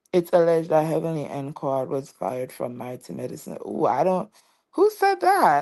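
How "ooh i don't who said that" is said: swooping, sing-song put-on voice with wide pitch swings. Reading out a viewer's comment, then asking who said that: Porsha Williams voice. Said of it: "in my Porsche voice".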